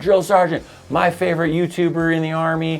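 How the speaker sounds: called out at attention, pitched high. Demonstrating how to answer a drill sergeant in the Army, yelling. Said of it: "you're yelling".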